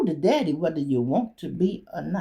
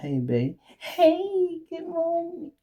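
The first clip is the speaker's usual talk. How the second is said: very high, slow, phony cutesy voice; 13 semitones higher than usual. Complaining about someone acting phony in the morning, the speaker mimics them: imitating a phony cute voice. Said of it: "This ain't how you talk".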